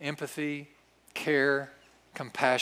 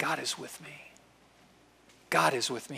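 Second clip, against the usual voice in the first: whispering. Leading a prayer, showing listeners how to say the phrase: whispering. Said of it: "just whisper it".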